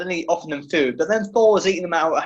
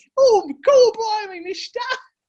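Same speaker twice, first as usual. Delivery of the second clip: very high-pitched put-on Victorian servant voice; 4 dB louder than usual. Teasing the other speaker for sounding like a Victorian servant, Victorian servant voice. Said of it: "You sound like a Victorian servant".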